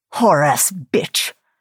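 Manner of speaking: vicious growling snarl. Narrator reads Joseph's line as he looks down at Carly's limp body, snarling. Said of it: "he snarled".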